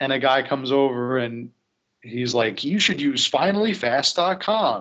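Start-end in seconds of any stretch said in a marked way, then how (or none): 2.6-4.8 cheesy 90s commercial voice, higher pitch. Retelling a commercial where a guy recommends a website, in a cheesy FinallyFast ad voice. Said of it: "they're like really cheesy almost like 90s commercials".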